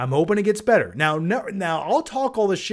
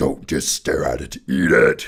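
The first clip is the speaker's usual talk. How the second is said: very deep, very low horror creature voice; 3 dB louder than usual. Performing a requested line as Vecna: Vecna voice. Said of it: "Please do Vecna saying".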